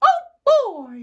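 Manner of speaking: voice going way up high and loud. Showing off a newly learned impression to viewers: Mickey Mouse voice. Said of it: "What else does he say?".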